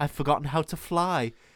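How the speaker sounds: put-on aged dame voice. Retelling a scene where old Wendy turns Peter down: soft old Maggie Smith voice. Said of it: "in a very soft old Dame Maggie Smith voice".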